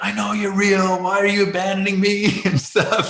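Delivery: high-pitched scream, crying out. Retelling the despair after Mayo Clinic treatment brought little improvement: acting out screaming at God. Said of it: "I'm screaming at God".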